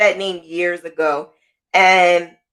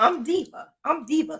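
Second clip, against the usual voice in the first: high, soft, happy, excited voice. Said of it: "you sound happy and you sound like you are".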